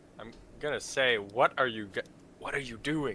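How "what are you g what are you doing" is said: hushed, careful tone, pitched up. Speaking in character to creatures made of fire: hushed tone. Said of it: "in a hushed tone".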